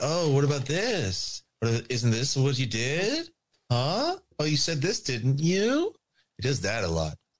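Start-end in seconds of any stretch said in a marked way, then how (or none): 0.0-5.9 smug, teasing, pitched-up needling tone. Imitating a smiling questioner who keeps asking gotcha questions: imitating a smiling question asker. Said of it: "that smiling Joker question asker".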